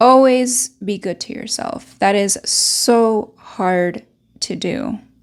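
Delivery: slow, moved, emotional musing with feeling showing. Speaker passes a note's advice on to listeners, getting emotional. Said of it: "I'm getting emotional here".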